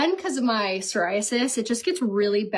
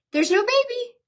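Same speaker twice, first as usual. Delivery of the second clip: mock very high, all-cheery doctor voice; 14 semitones higher, 3 dB louder than usual. Retelling how a doctor delivered bad news: imitating a doctor's cheery tone. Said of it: "he comes in all cheery".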